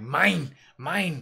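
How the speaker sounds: loud, primitive caveman voice. Yanking your girl close when some dude checks her out, in a caveman voice. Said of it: "like a caveman".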